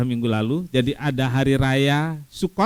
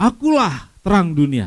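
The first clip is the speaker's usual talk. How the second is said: rousing, swooping, animated, proclaiming delivery; 4 semitones higher than usual. Picturing a shout in the middle of a crowd: imitating Jesus shouting. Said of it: "Tiba-tiba dia berteriak".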